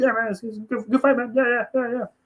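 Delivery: bad, very high, awkward, easygoing friendly-guy voice. Retelling what Stipe said after the fight: bad Stipe Miocic impression. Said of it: "I can't do an impression of him".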